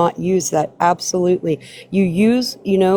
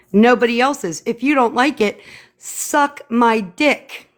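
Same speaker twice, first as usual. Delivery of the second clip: very loud, higher; 5 semitones higher than usual. Making a firm statement to another speaker: very loud. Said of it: "I'm going to say it very loudly".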